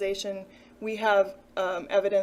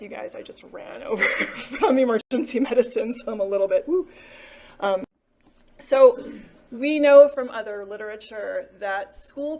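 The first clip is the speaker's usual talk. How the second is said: puffing, winded, out-of-breath talk; 6 dB louder than usual. Speaker presenting research after running over from emergency medicine, out of breath. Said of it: "sorry I'm out of breath".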